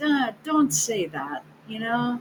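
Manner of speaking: soft, nice, quiet voice. Retelling telling a guy in a store to stop, retelling saying it quietly and nicely. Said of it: "I said real nicely and quietly".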